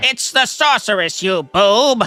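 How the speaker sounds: nasal villainous voice. Copying a clip of villain insults: Skeletor impression. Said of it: "Skeletor voice impression".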